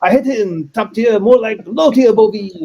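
bad, terrible, put-on French accent. Imagining how listeners in Paris will react, in a terrible French accent. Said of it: "my terrible French accent".

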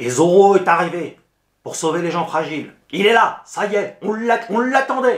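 high, loud, big mock-heroic fanfare voice.

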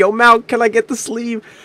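shrill, very high-pitched screaming yell. Retell how you called in public to a man who was ignoring you, acting out your own screaming. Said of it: "And I was screaming at people".

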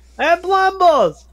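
shouting. Calling a character from inside the ship without an intercom: yelling. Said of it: "I'm just gonna yell".

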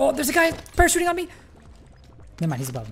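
very high, frantic, rushed, panicked freaking out. A player mid-game as an opponent parachutes onto them, freaking out. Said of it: "I'm freaking out".

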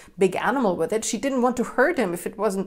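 ordinary delivery, nothing marked

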